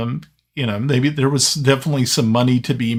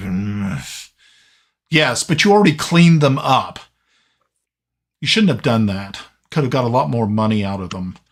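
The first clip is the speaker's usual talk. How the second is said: grumbling, complaining tone. Voicing an elderly shopkeeper greeting customers: Uncle Hercules grumbling. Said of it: "you hear a grumbling".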